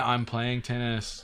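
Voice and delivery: deadpan, flat, bored monotone, zero enthusiasm. Mimicking the player in a game trailer, mock-bored with no enthusiasm. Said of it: "no emotion, no enthusiasm, no excitement. It's like".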